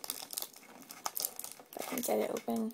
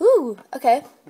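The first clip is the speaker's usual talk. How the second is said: high, loud gasp of excitement. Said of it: "You sounded excited".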